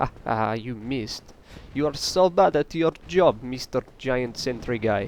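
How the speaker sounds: put-on Russian accent. Taunting a giant sentry enemy that just missed: fake Russian accent. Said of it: "offended with that hilarious accent".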